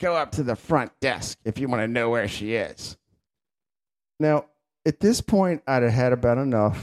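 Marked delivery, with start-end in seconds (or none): 0.0-3.0 mock-rude, curt put-on voice. Retelling a nurse's answer when asked for a patient's room, imitating a rude nurse. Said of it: "in the rudest voice, she goes".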